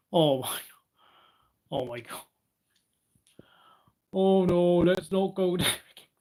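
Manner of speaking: laughing hard through the words. Reacting to a remark about Jos and Horner, laughing hard while talking. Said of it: "I don't know why I'm laughing so hard".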